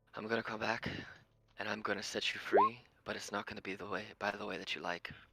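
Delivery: hushed whisper. In a game, the player's character stops before a portal and whispers to her. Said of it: "just whisper in Infernal".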